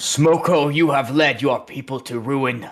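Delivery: booming very loud voice. A game player speaks as their character after casting a spell: booming voice. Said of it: "to give myself a booming voice".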